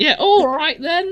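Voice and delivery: terrible put-on Cockney accent, very high-pitched. Showing the voice the speaker uses to get on his nerves: awful Cockney accent. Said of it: "that really awful like Cockney accent".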